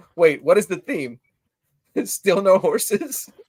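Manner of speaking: giggly speech while laughing. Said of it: "I'm laughing 'cause I read Mike's comment".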